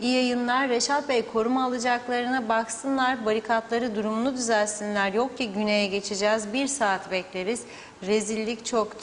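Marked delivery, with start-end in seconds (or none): none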